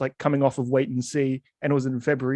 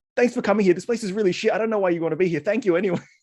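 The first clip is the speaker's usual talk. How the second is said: put-on nervous babbling, higher; 5 semitones higher than usual. Retelling meeting someone famous: imitating own nervous self. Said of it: "I always just get so nervous and I just go".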